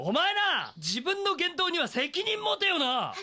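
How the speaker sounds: furious, high, deliberate angry yell. Scolding someone who let slip the past: yelling angrily. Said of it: "大声出さないでよ".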